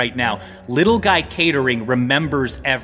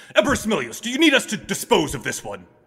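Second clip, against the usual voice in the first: high, swooping put-on character voice; 6 semitones higher than usual. Storyteller voices the guards charging forward to their emperor, voicing the guards. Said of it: "The guards sort of charge forward, and they say".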